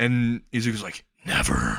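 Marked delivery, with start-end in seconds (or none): 1.2-1.8 very low, deep, dropped demonic voice. Voicing a character who refuses to give up coffee: demon voice. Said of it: "he just turns into, like, a demon voice".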